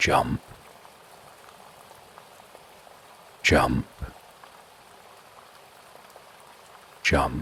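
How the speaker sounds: hushed, soft, eerie whisper. A voice from a dark hole summons the listener in, whispering. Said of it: "you hear a whispering voice".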